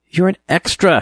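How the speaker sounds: sharp, snapping, very high-pitched and loud. A narrator reads their own reply to Jean's sneer, snapping back. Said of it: "I snapped".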